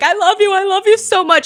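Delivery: acted-out, high, tearful, overwhelmed gushing. Retelling what a fan said while hugged: imitating a fan crying.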